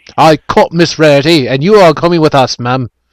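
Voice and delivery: put-on British accent. Acting out an imagined Imperial Agent line: British accent. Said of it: "A British accent".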